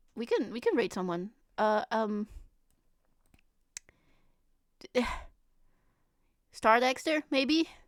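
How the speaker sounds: voice really giving out. Speaker apologizes that their voice is really going; voice giving out. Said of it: "my my voice is really going".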